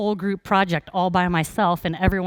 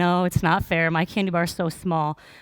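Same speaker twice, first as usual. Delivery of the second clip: ordinary talk, nothing marked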